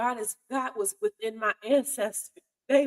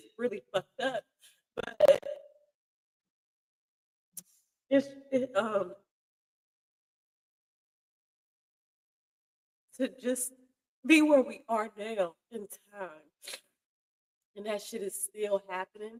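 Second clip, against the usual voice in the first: tearful words spoken through sobs. Speaking up front to the audience about something painful, crying while speaking. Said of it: "I'm crying because of this shit".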